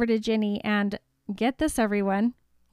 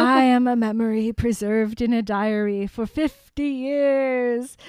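sinister villain voice. Retelling the diary scene, speaking the villain's line: Voldemort voice. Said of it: "I can't help but talk in like the Voldemort voice".

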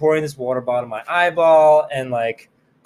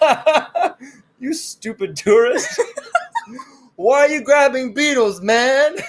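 play-acted very high, scornful, mocking laughing jeer; 10 semitones higher than usual. Retelling Michelle's reaction to a beetle squirting acid in the speaker's face, imitating Michelle laughing mockingly. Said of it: "He was laughing at me".

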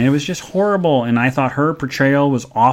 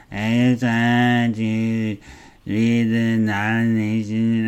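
mock very slow, spaced-out stoned drawl; 3 semitones lower, 4 dB quieter than usual. Retelling how an awards presenter read the nomination: imitating Patricia Arquette sounding stoned. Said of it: "she just sounded like she was really, really stoned".

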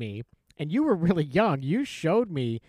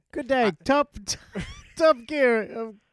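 bad fake British accent, much higher pitch; 9 semitones higher than usual. Talking about the UK Top Gear, the speaker attempts a bad British accent. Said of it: "I can't even do an accent".

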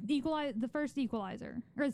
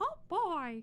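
high, squeaky little cartoon mouse voice; 6 semitones higher than usual. Retelling the first time he heard the speaker do a cartoon voice: Mickey Mouse impression. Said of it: "do an impression of a cartoon character".

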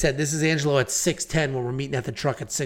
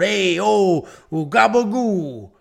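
loud, high, greasy Italian guy voice; 5 semitones higher, 5 dB louder than usual. Describing a video clip a buddy sent, imitating the guy in it: Italian guy voice. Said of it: "greased-up Italian guy going".

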